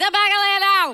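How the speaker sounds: put-on very loud, laid-on-thick Cajun accent. Quoting the boat captain's order, imitating a thick Cajun accent. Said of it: "he had a very, very thick Cajun accent".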